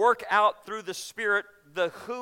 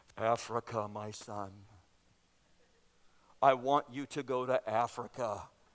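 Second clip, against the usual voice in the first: very low, very slow, hushed voice; 9 semitones lower, 7 dB quieter than usual. People hiding in a vent answer a young man's prayer in their best God voice. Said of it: "in their best God voice".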